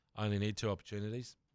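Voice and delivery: plain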